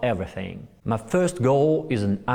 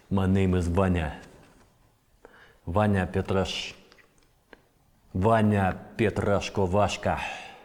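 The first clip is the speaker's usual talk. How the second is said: movie-style Russian villain voice; 4 semitones lower than usual. Auditioning for the part of a russian villain, introducing the character in stereotyped movie russian villain accent. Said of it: "audition for the part of uh, Russian villain".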